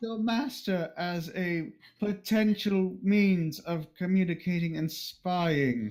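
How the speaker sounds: slow, high, forced out through gritted teeth. Voicing a character making a suggestion to another player: through gritted teeth. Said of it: "she says through gritted teeth".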